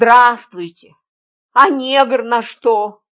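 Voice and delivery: loud, contemptuous, dismissive, scornful tone. A man answers the narrator's remark about a woman, contemptuous. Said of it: "презрительно сказал Парамонов".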